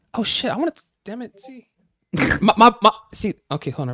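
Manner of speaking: very high, eager, worked-up voice. Reacting to surprising news about someone who was locked up: voice going high with excitement. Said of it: "My voice gets high when I'm interested in shit".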